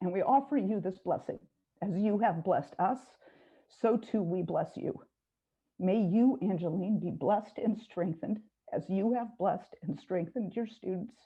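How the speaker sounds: choked-up voice catching with emotion. Giving a farewell blessing to a retiring teacher, a little choked up. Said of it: "now I'm getting a little choked up".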